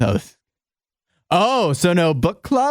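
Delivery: dismissive, condescending, scoffing tone. Retelling a coworker's reply about skipping book club, mocking a condescending tone. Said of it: "In a condescending tone".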